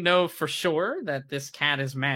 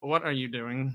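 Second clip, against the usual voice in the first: speaking in a talking cat character voice; 6 dB quieter than usual. Voicing a cat that suddenly speaks to a player: talking cat voice. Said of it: "the cat speaks and says".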